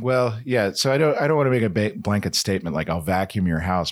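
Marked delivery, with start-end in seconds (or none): none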